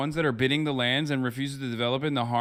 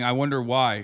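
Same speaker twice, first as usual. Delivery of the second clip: normal talking voice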